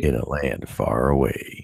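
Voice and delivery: deep, epic movie trailer announcer voice. Trying out a movie trailer announcer voice right after the other speaker does one. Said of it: "my like movie trailer announcer voice".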